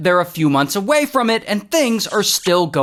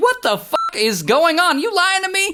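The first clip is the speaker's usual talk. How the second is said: acted, shrill, very high, furious angry yelling; 11 semitones higher than usual. Retelling how a woman phones Doctor Paulo, retelling her yelling. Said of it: "she's like yelling at him like".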